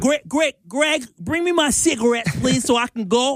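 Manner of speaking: put-on old woman voice, half Boston, half New York accent. Asked to voice the grandmother talking to a seven-year-old: half New York, half Boston accent. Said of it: "do your half New York, half Boston accent".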